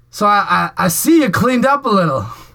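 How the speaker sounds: high, loud, mocking voice.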